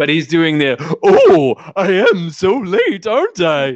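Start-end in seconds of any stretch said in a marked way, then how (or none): 1.0-3.8 very slow, swooping, sing-song, drawn-out cartoon rabbit voice. Retelling what a guy in the show says, imitating a famous voice actor. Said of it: "doing almost an imitation of".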